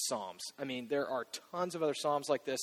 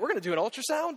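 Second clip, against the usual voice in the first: put-on eager, sudden, very high, excited outburst; 11 semitones higher, 4 dB louder than usual. Retelling the moment the doctor mentioned an ultrasound, retelling an excited blurt. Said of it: "I just sort of excitedly blurted out".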